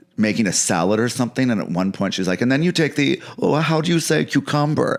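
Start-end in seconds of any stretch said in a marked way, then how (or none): 2.5-5.0 high-pitched, heavily laid-on put-on Spanish accent, chatty. Retelling a clip of her making a salad: Hilaria Baldwin impression with Spanish accent. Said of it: "The, the Spanish thing is".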